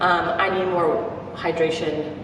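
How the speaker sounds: usual speaking voice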